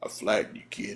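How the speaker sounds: big, large, deep voice in low register. Retelling what the man on top of the speaker said, in a big deep voice. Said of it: "that big old deep voice".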